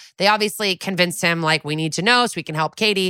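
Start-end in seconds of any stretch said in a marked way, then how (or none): none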